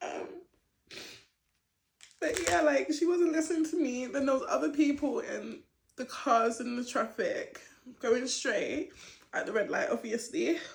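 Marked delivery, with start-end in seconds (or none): 0.0-4.0 speaking through tears, pitched up. Recounting an incident on camera, unable to hold back: crying while talking. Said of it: "I know I said it's really lame to cry right now".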